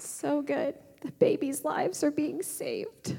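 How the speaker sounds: deeply moved voice. Speaker talking about abortion laws, emotional. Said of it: "I get really emotional about this".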